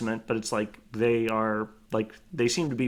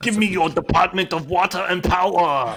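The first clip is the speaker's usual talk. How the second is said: booming, very loud, pitched-up, belted out high; 8 semitones higher, 8 dB louder than usual. Joining an impression contest about seizing the utilities: Arnold Schwarzenegger impression. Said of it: "quick Arnold Schwarzenegger impression contest".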